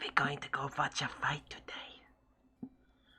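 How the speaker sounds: whispered, dragged out very slowly. Voicing a character who leans over to another character: whispering. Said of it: "she whispers over and she's like".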